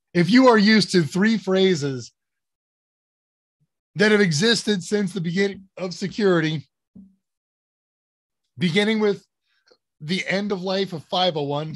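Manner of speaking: hiccuping through the words. Host explaining three big changes to viewers, hiccuping. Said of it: "sorry, I'm hiccuping".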